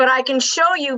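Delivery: normal talking voice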